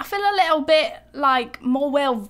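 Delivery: awful, failed put-on British accent. Trying out an accent mid-conversation, in a bad British accent. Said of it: "This is the worst British accent I've done".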